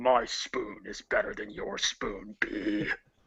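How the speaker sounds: bad, raspy, creaky, put-on monster voice. In a spoon-fight bit, the speaker taunts a bee in a bad Mewtwo voice. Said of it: "I know I can't do a Mewtwo voice".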